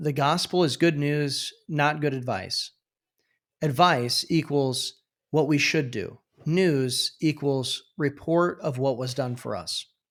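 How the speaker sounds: usual speaking voice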